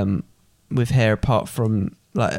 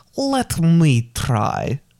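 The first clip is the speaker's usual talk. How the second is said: high voice with pitch swooping up and down; 6 semitones higher than usual. Quoting a line after being asked for the impression again: Gru impression. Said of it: "your Gru impression".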